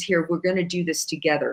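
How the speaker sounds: even, relaxed tone. Retelling how Satan hands over the sword, imitating Satan's calm voice. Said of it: "Very calm and like".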